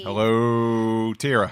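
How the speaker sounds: light Midwestern twang, drawn-out hello. Opening the show, a co-host greets his fellow co-host with a little Midwestern twang. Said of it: "a little Midwestern twang in there".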